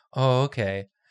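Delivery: let-down, deflated, disappointed, all excitement gone. Retelling a fan's reply on learning Julia was absent: imitating a disappointed fan. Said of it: "went from being so excited to just, like, back to normal".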